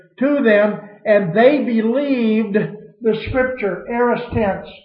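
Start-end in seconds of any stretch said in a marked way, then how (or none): 1.1-3.9 slow delivery with stress on they. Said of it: "When did they believe?".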